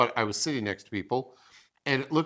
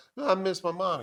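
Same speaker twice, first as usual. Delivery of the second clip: high, put-on voice of a small girl; 6 semitones higher, 3 dB quieter than usual. Retelling a story where a policeman asks a girl what's wrong, little girl voice. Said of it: "That's my voice".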